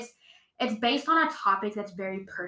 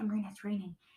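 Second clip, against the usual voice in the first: put-on whisper, quieter; 8 dB quieter than usual. Retelling how the father woke the speaker at night: imitating a whisper. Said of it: "He would whisper".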